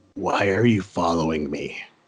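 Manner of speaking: very low, hushed murmur close at the ear. With a knife under your chin, a familiar voice speaks into your ear. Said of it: "a familiar voice in your ear go".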